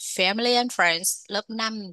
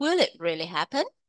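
rising pitch at the end on happen. Teacher reads a yes-no question example: rising pitch on happen. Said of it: "ngữ điệu sẽ đi lên ở cuối câu nhé".

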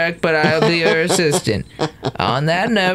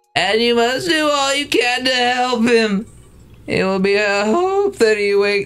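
high voice with a genuine crack; 6 semitones higher than usual. Reading a script line aloud on a recorded podcast, voice cracking. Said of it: "That was an actual voice crack".

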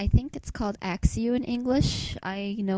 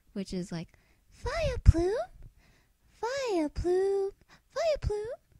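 put-on creature cry, much higher pitched; 12 semitones higher than usual. Going through Pokémon and imitating each one's cry: Vileplume cry impression. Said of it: "Something like that".

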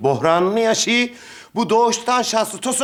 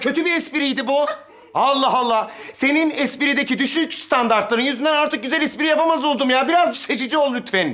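cross, exasperated, pitched-up angry tirade; 5 semitones higher than usual. Scolding the girl who laughed at a bad joke, yelling at her. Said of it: "Bağırma lan Makbule ablaya".

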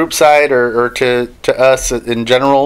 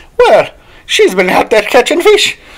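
put-on, very high, sing-song Irish accent; 10 semitones higher than usual. Imagining an Irish listener in Europe commenting later on: Irish accent. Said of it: "an Irish person later on going".

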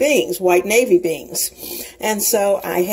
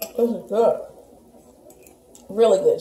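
talking with mouth full of hot food. Tasting fresh pasta and reacting to it: talking with a mouthful of hot food. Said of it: "it's so hot I can barely talk".

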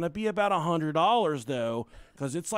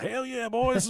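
put-on quiet mutter under breath, higher; 6 semitones higher than usual. Retelling passing two men making out: retelling a mutter under breath. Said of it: "under my breath, I was like".

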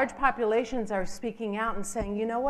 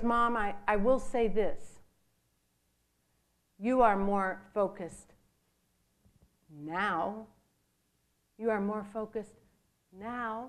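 deeper, lowered put-on voice. A mother retelling what her son told her, imitating his lowered voice. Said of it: "he lowers his voice".

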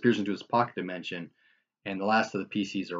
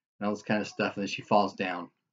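ordinary delivery, nothing marked

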